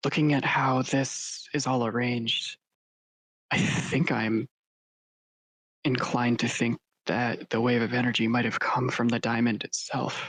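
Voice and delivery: low, audible, carrying stage whisper. A player speaking in character during a game, in a stage whisper. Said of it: "I'll talk low, but I want to be heard".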